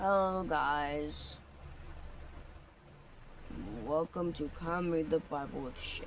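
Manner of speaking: depressed, dejected, glum, with "guys" drawn out. Opening a Bible-reading video by greeting viewers, sounding depressed. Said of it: "why I sound depressed".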